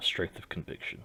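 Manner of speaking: soft, muttered whisper under the breath. Speaking in character beside a grieving companion: said under the breath. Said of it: "just say a little bit under my breath".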